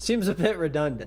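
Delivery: amused, light chuckling laugh. Describing an old horror film's title, the speaker remarks, amused chuckle.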